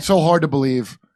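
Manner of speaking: dry, sarcastic false disbelief. Responding to another speaker's theory, sarcastic. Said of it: "Kurt was being sarcastic".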